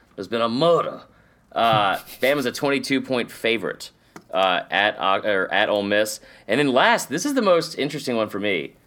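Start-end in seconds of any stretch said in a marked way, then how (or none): 0.2-1.0 put-on old Southern accent, faster. Speaker practicing an accent they say needs work, old Southern accent. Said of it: "Old Southern".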